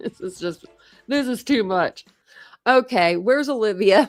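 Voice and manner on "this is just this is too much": words broken up by laughter. Reacting to a funny profile picture, laughing while talking. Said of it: "I'm sorry, I'm laughing".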